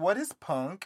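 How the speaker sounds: put-on small, childlike, little childish voice. Retelling asking mom a question as a kid, little childish voice. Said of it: "that's the little childish voice that I use".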